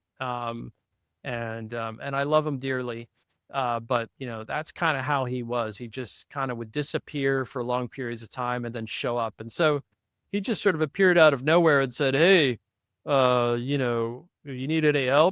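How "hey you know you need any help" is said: slow, unhurried, halting, drawn-out delivery. Retelling how a friend offered help, doing an impression of him. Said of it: "that's my best Stein impression".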